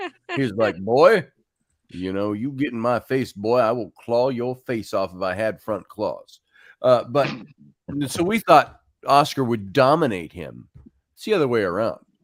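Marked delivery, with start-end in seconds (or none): 0.8-6.4 put-on southern voice, lower. Describing the old family cat, the speaker voices him: southern voice for Oscar the cat. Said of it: "I went southern on his voice".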